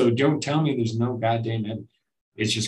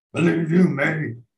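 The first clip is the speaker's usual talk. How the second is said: bad put-on Austrian bodybuilder voice, higher and louder; 6 semitones higher, 5 dB louder than usual. Doing a caveman Arnold Schwarzenegger impression: terrible Arnold Schwarzenegger impression. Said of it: "Terrible impersonation".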